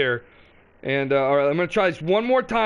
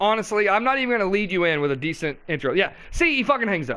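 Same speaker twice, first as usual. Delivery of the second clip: ordinary delivery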